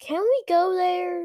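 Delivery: eager, insistent tone. A child in the back seat spotting a roadside billboard, demanding eagerly. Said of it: "Luke demanded eagerly".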